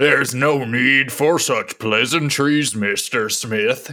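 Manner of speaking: put-on Kentucky politician voice. Answer Mr. Smith from Colorado in a McConnell impression, all Kentucky. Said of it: "McConnell, all Kentucky and shit".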